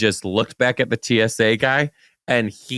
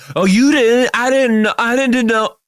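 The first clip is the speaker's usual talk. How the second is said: very high, loud, mocking feigned innocence; 12 semitones higher, 6 dB louder than usual. Mocking the other speaker's suggestion to play dumb: mocking feigned ignorance. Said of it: "the students used to do the shit that you're doing".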